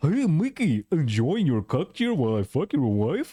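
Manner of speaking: way cranked-up, silly cartoon voice. Mid-commentary, switching into the Goofy voice for a joke. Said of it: "the goofy voice".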